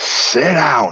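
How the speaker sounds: loud, yelled delivery. Retelling one christmas when her niece was winding her up, retelling a shout. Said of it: "So I shouted".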